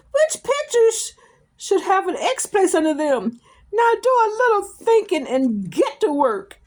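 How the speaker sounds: very high, loud, out-of-control shrill voice. Reading a teacher's line to a pupil aloud: shrill voice. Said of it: "began to grow shrill".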